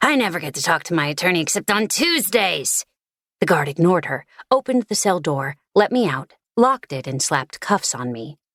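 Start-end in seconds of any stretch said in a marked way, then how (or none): 0.0-2.8 raspy, smoky smoker's voice. Reading a story aloud, voicing a prisoner complaining to the guard: raspy smoker's voice. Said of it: "in a raspy smoker's voice".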